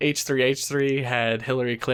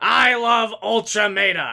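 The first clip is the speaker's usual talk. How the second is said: higher, shrill, crazy-sounding put-on voice; 9 semitones higher, 4 dB louder than usual. Doing a mock celebrity cameo praising the channel: Gilbert Gottfried impression. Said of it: "I am Iago from Aladdin".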